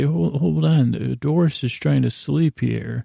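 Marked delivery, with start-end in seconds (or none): none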